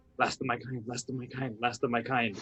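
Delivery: hushed whisper, to oneself. A player's invisible character runs down a hallway, whispering to himself. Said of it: "I'm just whispering to myself".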